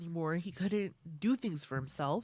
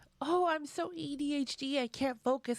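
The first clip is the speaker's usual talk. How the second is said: high, drawn-out, sarcastic mocking voice; 9 semitones higher than usual. Retelling how a creator makes fun of people: imitating a mocking impression. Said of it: "kind of make fun of them".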